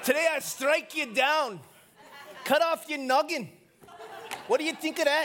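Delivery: put-on terrible high Scottish accent. Imagining David facing Goliath, David in a bad Scottish accent. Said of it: "That's a terrible Scottish accent".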